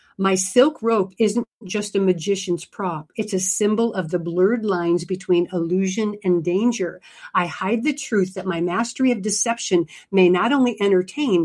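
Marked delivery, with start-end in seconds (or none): none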